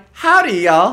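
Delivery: put-on very high, shrill, loud animatronic saloon-girl voice. Playing up a goodbye after being compared to an animatronic saloon girl voice. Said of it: "an animatronic saloon girl".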